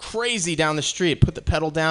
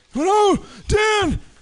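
put-on old man voice, very high; 3 dB louder than usual. Retelling a passenger's reaction to the driver's other job, in an old man impression. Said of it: "I'm in the middle of an old man impression".

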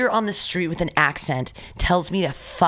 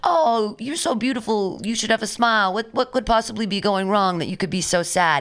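put-on vague English, Irish or Australian-sounding accent; 4 semitones higher than usual. Quoting a passing guy who spoke to you, in a put-on English-sounding accent. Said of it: "A guy with an accent. It sounded like he was English".

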